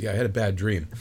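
ordinary delivery

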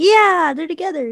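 high, excited gushing. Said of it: "I was like".

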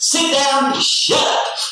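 very high, slow, stern authoritarian grandmother voice. Telling how a grandmother calms someone down: authoritarian grandmother voice. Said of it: "In the most authoritarian grandmother voice".

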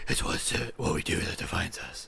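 soft, breathy, restrained whisper. Comparing the two films, imitating the hero's milder voice: Batman voice. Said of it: "in Begins, he's just kinda like".

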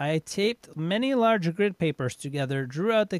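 ordinary delivery

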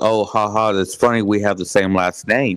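ordinary talk

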